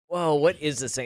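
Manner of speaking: ordinary delivery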